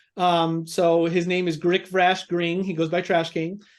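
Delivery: ordinary delivery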